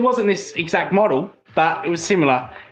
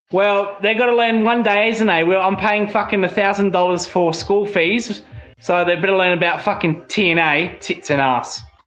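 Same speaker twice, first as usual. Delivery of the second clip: usual speaking voice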